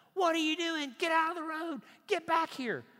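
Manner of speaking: very high, very loud angry shout. Retelling how he yells at his son who ran into the road: imitating himself yelling. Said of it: "you just saw me yelling at my son".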